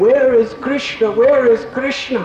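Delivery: put-on high, tearful, sobbing weeping cry. Retelling how he cried all day in his studies, acting out weeping. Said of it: "he was just crying and weeping".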